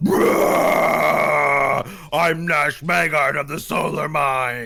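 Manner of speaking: dragon's roaring yell. Narrator voicing a dragon that flies out at the player: yelling dragon. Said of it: "it yells".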